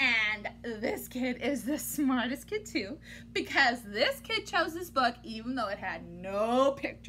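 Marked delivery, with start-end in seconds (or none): none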